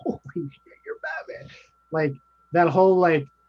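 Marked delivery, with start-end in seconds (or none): 0.0-1.5 put-on young kid voice, freaking out with excitement. Describing a movie scene where the young kid meets Batman: imitating Barry Allen freaking out. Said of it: "Barry Allen's freaking out".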